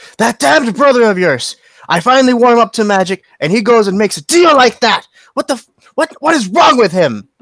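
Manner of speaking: furious, loud, high-pitched ranting yell. A father stomping back and forth in a room speaks to his child, angry yelling. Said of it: "Sorry for yelling".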